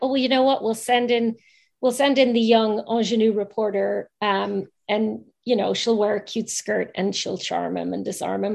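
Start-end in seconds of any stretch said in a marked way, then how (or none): none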